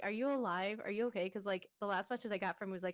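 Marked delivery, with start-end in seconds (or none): none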